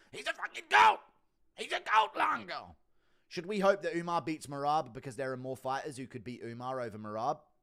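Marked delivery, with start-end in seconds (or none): 0.2-2.8 shrill, very high, very loud, creaky rasping voice. Asked for an impression of Sarah calling Marab a goat, do an impression of Sarah. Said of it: "Impression of Sarah".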